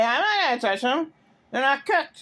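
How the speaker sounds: high-pitched screaming. Retelling what someone said about the pancakes: imitating someone screaming. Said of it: "He screamed".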